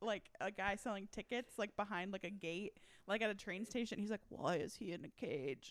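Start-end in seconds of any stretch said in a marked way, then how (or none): 4.3-5.7 very slow put-on talking-bear accent. Retelling the bear's line at a train station gate: imitating the talking bear's accent. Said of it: "I can't even do it".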